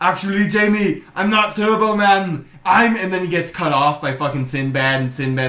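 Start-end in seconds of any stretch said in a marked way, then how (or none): 0.0-2.5 put-on Austrian-accented English. Retelling a movie scene where a man answers Jamie, in an Austrian accent. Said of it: "Austrian accent".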